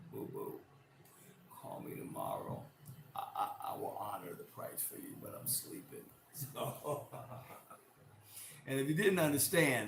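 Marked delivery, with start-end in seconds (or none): 0.1-6.1 mock drowsy, gravelly, breathy, sexy bedroom murmur. Retelling late-night customer calls, the speaker answers in a put-on sleepy, sexy voice. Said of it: "that was my sleepy, sexy voice".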